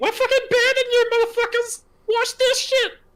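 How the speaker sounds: very high little puppet-style voice. Recalling mocking voice actors, the speaker repeats what he said as Elmo: Elmo voice. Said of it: "As Elmo".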